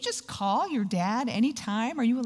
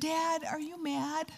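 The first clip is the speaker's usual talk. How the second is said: put-on soft, small, pitched-up little-girl voice; 5 semitones higher, 7 dB quieter than usual. Retell a nervous grown woman asking her dad a question, imitating Jenna's little-girl voice. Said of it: "little Girl, kind of sound in her voice".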